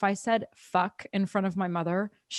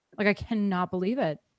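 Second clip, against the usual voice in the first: ordinary talk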